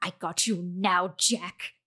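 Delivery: faint ancient coughing voice. Telling a story, a voice in the dark speaks to jack: ancient voice, almost a cough. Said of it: "in this ancient fucking voice, almost a cough rather than a phrase".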